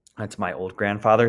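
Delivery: ordinary talk, nothing marked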